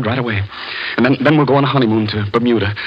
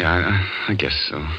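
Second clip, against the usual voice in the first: unhappy, grudging, reluctant, lower and quieter; 5 semitones lower, 5 dB quieter than usual. [name] answering Anne, who wants things her way; unhappy, reluctant. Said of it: "You don't sound very happy about it".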